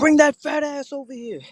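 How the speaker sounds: acted-out yelling. Acting out how to yell at women on the street: imitating someone yelling. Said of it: "you gotta yell and scream at them".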